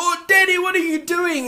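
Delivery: put-on high-pitched, light two-year-old voice. A father imagining his two-year-old daughter's reaction, imitating a toddler screaming. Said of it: "She'll probably start screaming".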